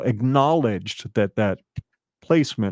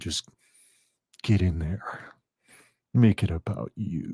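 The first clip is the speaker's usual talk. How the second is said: deep, low, slow, raspy whisper; 3 semitones lower, 4 dB quieter than usual. Imagining someone whispering to himself in the mirror: deep, slow, raspy whisper. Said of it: "that deep, slow, raspy voice whispering to himself".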